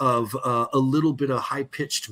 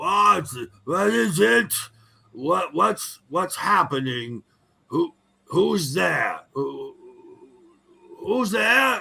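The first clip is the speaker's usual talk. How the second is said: put-on very old man's voice, much higher; 5 semitones higher than usual. Narrating a scene, a man calls out from the left-hand side: very old man's voice. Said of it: "you can hear a very old man's voice saying".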